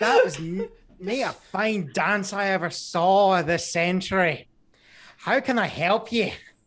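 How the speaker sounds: put-on Scottish brogue. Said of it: "He got the brogue".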